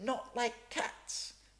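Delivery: very high, shrill, impassioned, passionate cry. Narrator reading the mouse's reply to Alice: shrill, passionate cry. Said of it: "cried the mouse in a shrill, passionate voice".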